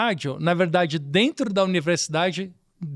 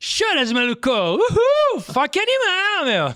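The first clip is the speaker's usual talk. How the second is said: very high, swooping surfer dude character voice; 12 semitones higher than usual. A radio sketch performer recalling a character he voiced, Peterson Foca surfer voice. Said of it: "voz que eu fazia, né? Do personagem que era um surfista".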